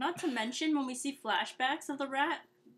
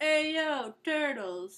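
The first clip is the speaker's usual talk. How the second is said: terrible put-on Brooklyn street New York accent; 2 semitones higher, 4 dB louder than usual. Imagining how a rat living in new york would greet the turtles: terrible new york accent. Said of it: "It'd be some terrible accent".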